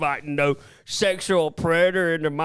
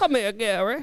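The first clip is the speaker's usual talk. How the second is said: put-on elderly woman voice; 4 semitones higher than usual. Joking about a producer's new girlfriend: put-on old lady voice. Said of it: "That's what Gary's new girlfriend sounds like".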